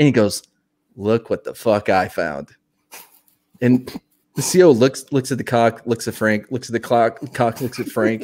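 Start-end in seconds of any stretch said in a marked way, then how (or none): none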